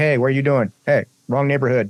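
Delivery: normal talking voice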